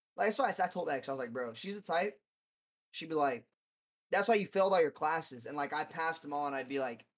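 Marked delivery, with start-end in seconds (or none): none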